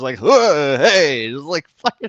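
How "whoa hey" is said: very loud outburst in a middle-aged man's voice. Mimicking how the other speaker reacted to explosions: imitating a middle-aged man. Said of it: "sounding like a fucking middle-aged man".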